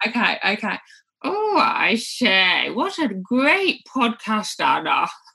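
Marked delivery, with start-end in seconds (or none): 1.2-5.1 put-on elderly character voice. Answering a request for an impression: Dot Cotton voice. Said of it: "how about Dot Cotton?".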